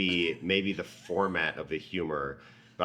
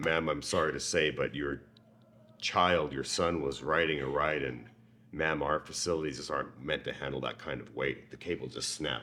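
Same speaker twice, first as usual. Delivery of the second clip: put-on, world-weary, grizzled police detective voice; 3 semitones lower, 3 dB quieter than usual. Telling a mother her son had an accident in the park, grizzled police detective voice. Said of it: "grizzled police detective".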